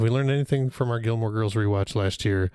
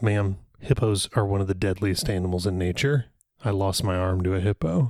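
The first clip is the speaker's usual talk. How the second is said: usual speaking voice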